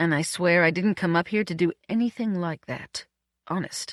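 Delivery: ordinary delivery, nothing marked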